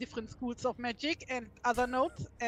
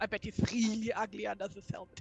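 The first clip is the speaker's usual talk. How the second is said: hushed, half-whispered stage whisper; 3 semitones lower, 4 dB quieter than usual. During a role-play scene, a character leans over to a companion, half-whispering.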